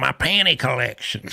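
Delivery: put-on high-pitched old man voice. Retelling a cop-show arrest, voicing the old man Russell: imitating Russell's old-guy voice. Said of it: "he was an old guy talk like this".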